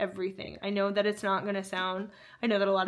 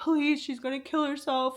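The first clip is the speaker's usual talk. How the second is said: put-on tearful, sobbing, high crying voice; 6 semitones higher than usual. Acting out a man pleading to a woman, imitating someone crying. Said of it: "crying and being like".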